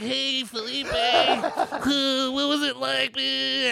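rough, drawn-out voice. Showing how another person talks, imitating Lee. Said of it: "Lee's kinda like".

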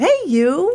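high, delighted, pleasantly surprised voice. Showing how a greeting should be said: delighted surprise. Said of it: "you have to say it like that. ... Like it's a surprise and a wonderful one at that".

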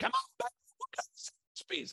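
whispered, breathy acted voice. Retelling his wife Kim at the finish line of a 5K: imitating Kim screaming. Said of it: "She's screaming".

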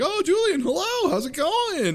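put-on super friendly, very high-pitched and slow. Retelling a hallway scene, a character greeting another: imitating someone being very friendly. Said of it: "very friendly at this point".

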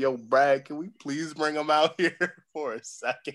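put-on pleading. Retelling how he kept asking the coach to let a player play: mock begging. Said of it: "I was begging".

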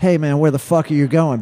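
mock, fast, rattled-off, half-shouted mild yell. Speaker retells yelling from his car at the band's van driver: retelling a scream. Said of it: "I start screaming".

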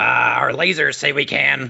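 talking like a pirate. Attackers in a sketch threatening to take the crew's captain, in a pirate voice. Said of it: "I don't know why they talked like a pirate".

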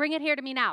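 mean, harsh, unkind voice. Speaker illustrates how an invitation to obey might be heard, in a mean voice. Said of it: "Do you hear it in a mean voice?".

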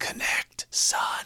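soft hushed whisper. Retelling a dad telling his son which pitch is coming, whispering. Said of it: "he's whispering".

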